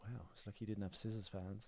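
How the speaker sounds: muttered under the breath. Retelling what a celebrity said after catching him: imitating a mutter under breath. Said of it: "he said under his breath".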